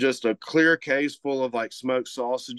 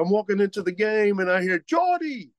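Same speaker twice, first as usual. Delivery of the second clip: put-on thick slurred Cajun accent, much higher, faster. Retelling what a man he just saw said; big cajun slur. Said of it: "he has a big Cajun slur".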